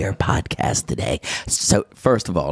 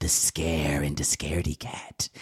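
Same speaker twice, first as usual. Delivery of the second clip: terrible serpent voice sinking to whispers. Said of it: "That was a terrible voice".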